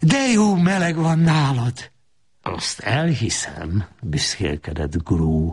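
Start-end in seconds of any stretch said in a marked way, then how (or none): 0.0-1.9 delighted, joyful cry. A young woman entering a man's flat, crying out with joy. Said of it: "a leány örömmel kiáltott fel".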